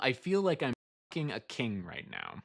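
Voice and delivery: ordinary talk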